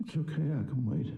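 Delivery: beaten, resigned, dejected tone. Game narrator pleading with Stanley to choose: defeated. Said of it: "He sounds so defeated".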